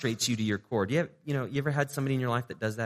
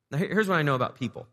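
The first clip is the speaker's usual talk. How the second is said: ordinary delivery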